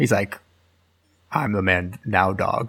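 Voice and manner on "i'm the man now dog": put-on Scottish movie-star voice, pitched lower. Asked to do the actor's voice, doing a Sean Connery voice. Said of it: "Of Sean Connery?".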